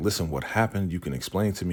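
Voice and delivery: ordinary talk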